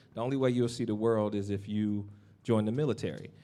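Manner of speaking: ordinary delivery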